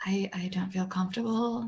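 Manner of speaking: very quiet, soft half-whispered aside. A player, in character during the game, speaks privately to another character, half-whispering. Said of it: "I'm whispering to Spoody".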